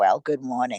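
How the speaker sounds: put-on old woman voice. Recalling how your grandma would come over and greet you, imitating grandma's voice. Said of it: "talk back to them in the same voice. Like my grandma".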